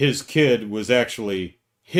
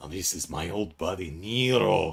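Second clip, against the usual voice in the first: low, quiet drawl with Nero stretched out; 4 semitones lower, 7 dB quieter than usual. A fan mimicking how young Cad Bane talks in the show, Cad Bane impression. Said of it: "when he starts talking like this".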